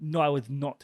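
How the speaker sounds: bad, fake Russian accent. Retelling a scene and voicing a woman's reply in a bad Russian accent. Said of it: "That's how she sounds".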